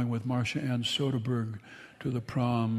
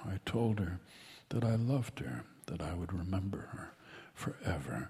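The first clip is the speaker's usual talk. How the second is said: low, hushed whisper spoken close to the ear; 5 semitones lower, 8 dB quieter than usual. A storyteller tells listeners what he whispered into a woman's ear, whispering. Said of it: "just as I'm whispering to you right now".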